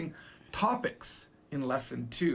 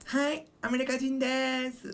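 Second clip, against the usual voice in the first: put-on cutesy girl voice, much higher, slower; 7 semitones higher than usual. Showing a listener how to say a Japanese phrase, in a cute girl voice. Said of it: "I'm saying it like a cute girl voice".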